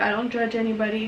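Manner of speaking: plain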